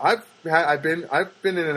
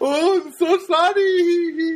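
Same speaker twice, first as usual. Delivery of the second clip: very high put-on Filipino accent, "sorry" stretched out; 14 semitones higher, 4 dB louder than usual. Retelling what a guy said after smiling at the speaker, imitating a Filipino accent. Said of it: "was like some kind of foreign".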